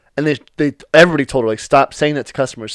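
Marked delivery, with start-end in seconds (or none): none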